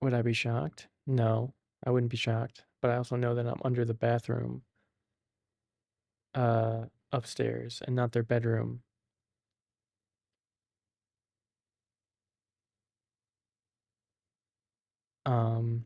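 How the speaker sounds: slight half-whisper. Speaking close to the mic to listeners, whispering-ish.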